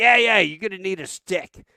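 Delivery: put-on offhand Boston accent. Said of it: "he's from Boston, and no shit, talks like".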